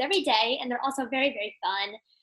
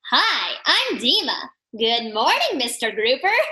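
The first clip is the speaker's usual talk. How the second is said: put-on loud, sing-song cartoon character voice; 5 dB louder than usual. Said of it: "she always goes".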